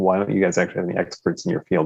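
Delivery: ordinary delivery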